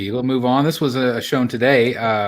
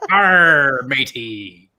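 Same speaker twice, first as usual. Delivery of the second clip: put-on storybook pirate voice; 4 dB louder than usual. Joking about naming a suit Pirate Spidey: put-on pirate voice. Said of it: "I'd name it Pirate Spidey".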